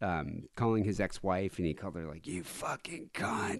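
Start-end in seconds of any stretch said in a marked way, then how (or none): 2.3-3.6 mock drunken rant, breathy and half-whispered. Retelling a drunk phone call to an ex-wife: imitating Mel Gibson screaming. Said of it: "He was screaming at her".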